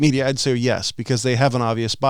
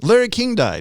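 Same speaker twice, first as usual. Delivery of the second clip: TV newscaster delivery, pitched up; 8 semitones higher than usual. Reading out a news item: news anchor impersonation. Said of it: "my news anchor impersonation".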